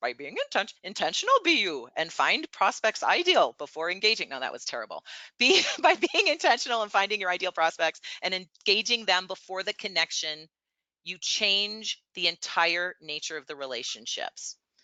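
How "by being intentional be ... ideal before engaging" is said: badly done, animated wise-master voice with swooping pitch. Repeating a point for the audience, the speaker does a Yoda voice. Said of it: "that was my Yoda voice".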